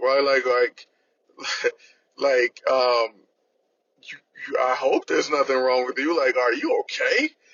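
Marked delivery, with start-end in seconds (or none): 6.4-7.3 acted, accusing, reproachful tone. Speaker retells how someone asked if they were alright, acting out that tone. Imitating an accusatory tone. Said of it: "spoken with an accusatory tone".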